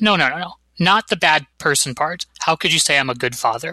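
ordinary talk

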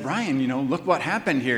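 usual speaking voice

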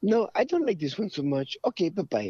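put-on high-pitched French girl voice. Retelling what a woman said about the movie, French girl accent. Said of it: "with that perfect French girl accent".

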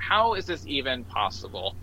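ordinary talk, nothing marked

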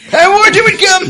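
very loud, very high, wild crazy-sailor voice. Reading a blog post aloud in a crazy sailor voice. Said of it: "I'm gonna do my crazy sailor voice".

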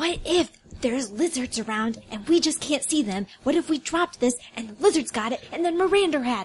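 hushed, dropped voice. Speaking in character to companions about keeping the rock; lowered voice. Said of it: "I lower my voice".

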